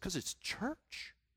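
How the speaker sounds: hushed, very quiet whisper. Retelling a man's reply when people ask why he whispers in church, imitating a man whispering. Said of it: "what are you whispering for?".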